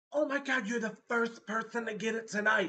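acted-out thrilled, delighted, excited, gushing outburst. Retelling what a trick-or-treater said when her costume was recognized, imitating someone excited. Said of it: "She was all excited".

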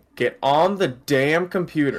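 fed-up tone.

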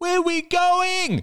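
very high, tearful crying scream. Seeing the suitcases in the hallway, a child in his father's arms screams. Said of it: "He screamed".

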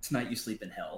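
usual speaking voice

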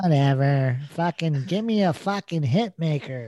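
demanding, impatient pop star voice. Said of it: "It's like".

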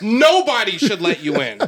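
irritated, annoyed outburst. Complaining about drivers who cut into the merge lane: getting mad. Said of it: "You see how I'm getting mad right now?".

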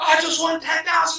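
mock screaming. Retelling a man who hit the best combination: retelling a scream. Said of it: "He's screaming".

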